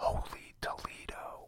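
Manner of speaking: whispering. Giving listeners a secret password to catch an impersonator, whispering. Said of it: "I'm going to whisper it".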